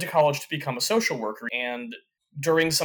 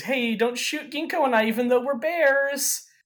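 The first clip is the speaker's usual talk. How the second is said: very high, playful, teasing, jabbing voice; 11 semitones higher than usual. Recapping an anime chapter, the speaker voices Lulu teasing Kureha, imitating Lulu teasing. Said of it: "kind of teases Kureha and says".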